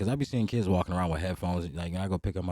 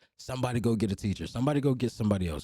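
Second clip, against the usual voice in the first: mild half-yell, projected across a room; 5 semitones higher than usual. Retelling a substitute teacher in a video calling for help: imitating someone yelling. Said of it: "she's yelling".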